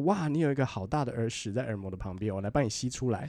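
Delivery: ordinary talk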